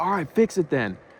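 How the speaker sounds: put-on fed-up, heated, angry tone. Retelling the angry reply after snatching the keyboard: imitating an angry retort. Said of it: "He was so heated".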